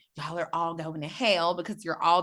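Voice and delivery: ordinary talk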